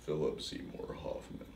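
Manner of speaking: low, tired, worn-out whisper in a put-on voice. Doing an impression of an actor saying his own name: Philip Seymour Hoffman impression. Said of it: "That's my impression of Philip Seymour Hoffman. It's like tired Bane".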